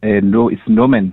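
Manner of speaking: put-on heavy, broad South African accent. Retelling how the man corrected her about his name, in Norman's thick African accent. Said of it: "in his thick African accent".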